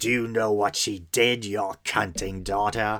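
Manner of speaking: put-on creepy, possessed young girl demon voice. Retelling a scene from The Exorcist in a creepy Mercedes McCambridge Exorcist voice. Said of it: "in that really creepy".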